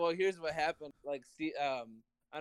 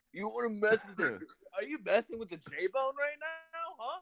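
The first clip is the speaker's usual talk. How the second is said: play-acted, heated, provoking angry taunt, pitched up; 7 semitones higher than usual. Recounting arguing with a girlfriend, retelling own angry arguing. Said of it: "whenever he gets angry".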